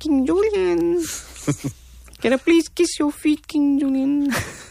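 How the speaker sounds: very high, squeaky cartoon sidekick voice. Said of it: "I can do Maud".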